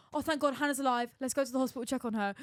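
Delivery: ordinary talk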